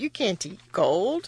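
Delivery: plain reading voice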